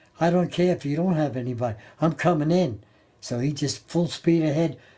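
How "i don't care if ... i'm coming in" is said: plain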